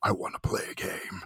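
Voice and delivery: put-on hushed breathy voice, barely above whisper. Chatting about an actor cast for his voice, trying a joke impression: Jigsaw voice. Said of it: "I was joking about doing my Jigsaw voice".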